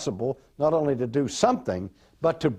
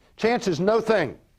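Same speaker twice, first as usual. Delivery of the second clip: faster, brisk, pitched-up delivery; 7 semitones higher than usual. Restating a phrase for the audience a second time, saying it faster. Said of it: "Let me say it faster".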